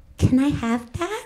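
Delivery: put-on slow, high, small, babyish voice. Mocking what you say when dating an old guy with money, in a small baby voice. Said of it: "Just like a small baby voice".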